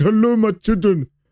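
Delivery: put-on odd, weird, vague, high European accent. Imitating how the other person acted like Santa Claus, in a weird European accent. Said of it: "this weird like, like European accent for it".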